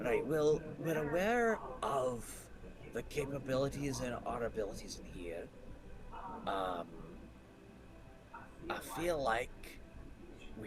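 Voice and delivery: muted, hushed, soft tone. A player speaks in character so nobody else can hear, in a hushed tone. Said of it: "like in a hushed tone".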